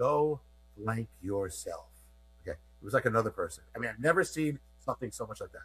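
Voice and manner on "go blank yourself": conspiratorial, secretive half-whisper under the breath. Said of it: "he speaks in a whisper like he's got a secret for me".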